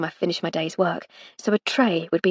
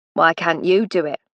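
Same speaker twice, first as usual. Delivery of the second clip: bitter, resentful, grudging, put-upon voice; 2 semitones lower, 3 dB louder than usual. Reading a novel aloud, a footman pushing back: resentful tone. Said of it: "in the same resentful tone".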